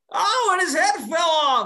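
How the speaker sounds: very high, loud, drawn-out calling out. Showing listeners who don't know him: Bob Menery voice. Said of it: "the famous, uh, Joe Flacco clip".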